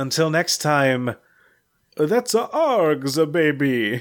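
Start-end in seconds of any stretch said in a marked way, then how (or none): 2.0-4.0 vampire voice drifting into an Italian accent. Signing off after plugging an upcoming production, in a vampire voice. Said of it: "That's my vampire voice".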